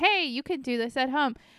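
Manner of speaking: ordinary delivery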